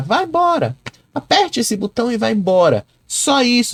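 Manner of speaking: high, exasperated, dismissive brush-off tone.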